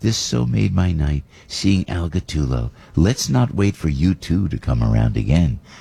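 slow, creaky lady voice.

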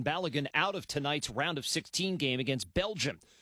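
plain

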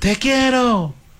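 very high, hard shout at full force. Narrator reading the old man calling out with hands around his mouth, shouting hard. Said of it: "gritó duro".

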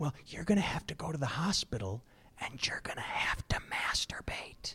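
sheepish, embarrassed, very hushed whisper. Quoting what she said to you, imitating her whispering. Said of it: "why are you whispering?".

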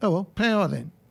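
quick, casual, put-on breezy offhand delivery. The speaker mimics how the other person casually and quickly said it: mimicking a casual quick remark. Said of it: "very casually and very quickly just said".

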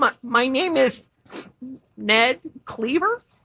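unsure, rising question-like intonation on "Cleaver". Giving one's name to a strict teacher: rising, questioning intonation. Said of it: "Are you asking me or telling me?".

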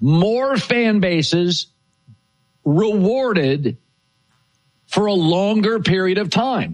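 very slow, deliberate, leaning on each word.

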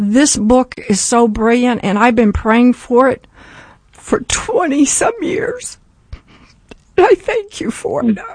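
tearful, choked-up voice, speaking through tears. Thanking a man on the line for his book, crying while speaking. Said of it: "I'm sorry I'm crying".

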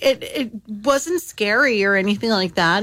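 normal talking voice

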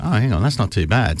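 ordinary talk

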